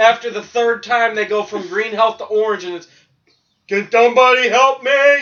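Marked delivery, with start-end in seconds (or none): 3.7-5.2 obnoxious, shrill, loud video-game character voice. Complaining about battle voice acting, imitating game character calling for help. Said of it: "the voice acting for battle gets obnoxious".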